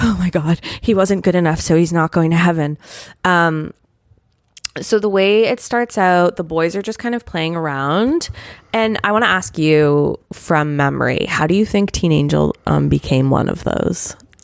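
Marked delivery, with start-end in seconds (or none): 0.0-2.8 mock trembling, breathless, gasping, shaken panic. Retelling own reaction while watching the first episode: mock shaken panic.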